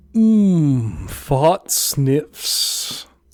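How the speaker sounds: put-on high-class society voice. Riffing on a bit with a co-host, trying it in a high-society voice. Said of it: "high society sort of voice".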